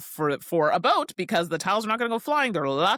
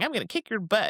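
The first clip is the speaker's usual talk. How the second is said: mocking, taunting put-on voice; 3 semitones higher than usual. Imagining playing Scrabble on a boat with mom, imitating mom's taunt. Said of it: "In just that tone of voice".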